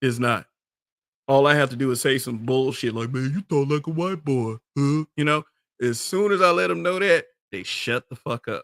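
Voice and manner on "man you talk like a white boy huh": put-on dumb, ignorant man's voice. Mimicking the voice of people who say such things: mimicking an ignorant man's voice. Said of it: "it's not hard to mimic their voice".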